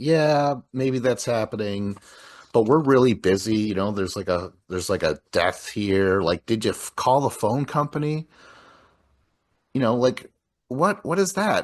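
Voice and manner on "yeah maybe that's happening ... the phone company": usual speaking voice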